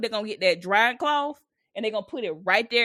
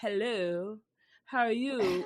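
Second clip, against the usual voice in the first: fancy, posh, eloquent put-on bougie voice; 7 dB quieter than usual. Describing how a bougie family friend talks, imitating a bougie tone. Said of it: "they always make up a bougie tone".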